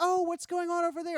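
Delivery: put-on very high, sweet little old lady voice. Retelling what an old lady said before she turned, imitating a sweet little lady. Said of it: "sweet little lady just like".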